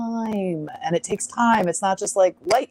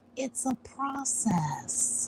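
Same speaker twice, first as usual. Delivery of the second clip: very slow, soft, drawn-out mocking delivery. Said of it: "just like this".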